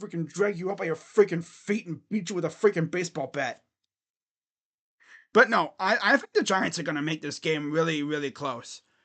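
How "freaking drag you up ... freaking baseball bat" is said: Brooklyn accent in full swing. Talking about a Giants versus Saints game, the speaker slips into a Brooklyn accent. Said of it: "I'm freaking talking like a Brooklyn person".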